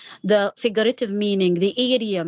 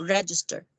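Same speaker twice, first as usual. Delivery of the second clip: register, stressed on first syllable reg; 3 semitones lower, 5 dB quieter than usual. Explaining noun versus verb stress: stress on reg in register. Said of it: "when it is a noun, I pronounce it like this".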